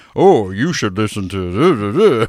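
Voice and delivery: affected very slow drawl, "to" stretched long. Repeating the co-host's impression back to him: imitating his put-on affect. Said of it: "what was that?".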